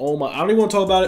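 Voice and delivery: fast, rushed, rattled-off delivery. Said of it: "Yes, I'm talking fast".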